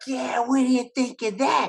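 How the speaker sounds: mock very high, loud shouting. Speaker acts out yelling at the TV during a Mets game, retelling yelling at the TV. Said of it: "But I was yelling at the T V".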